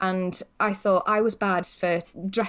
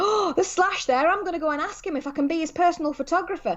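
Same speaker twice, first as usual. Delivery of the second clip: put-on shouting at the top of his voice, high and loud; 8 semitones higher than usual. Retelling what he called out in the press area: imitating someone shouting at the top of his voice. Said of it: "stood there at the top of his voice and went".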